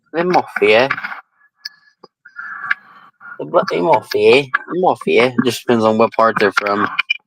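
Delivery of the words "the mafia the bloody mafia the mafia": put-on English accent. Echoing how english people say mafia: imitating english accent. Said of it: "how the English people say mafia".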